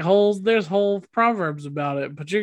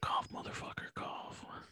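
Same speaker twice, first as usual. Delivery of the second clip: soft, far-off ASMR whisper. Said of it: "We've made it to the A S M R portion".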